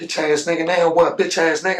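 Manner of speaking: put-on raging, tearful, angry crying scream. Retelling standing there that night after the shooting: retelling screaming. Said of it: "just screaming".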